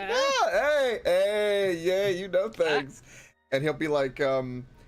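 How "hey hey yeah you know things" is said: giggling, much higher and louder. Voicing a character seeing off a traveler, giggling. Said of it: "He kind of he kind of giggles like".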